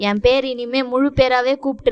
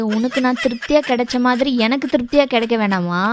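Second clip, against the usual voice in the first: usual speaking voice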